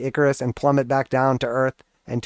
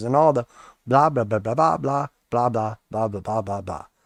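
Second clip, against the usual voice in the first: unintelligible cartoon grown-up blah-blah babble voice. Talking to viewers, he trails off into his Charlie Brown teacher impression. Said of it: "That's my Charlie Brown teacher impression".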